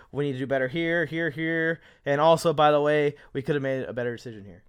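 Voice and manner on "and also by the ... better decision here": usual speaking voice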